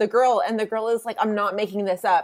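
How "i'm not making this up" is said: usual speaking voice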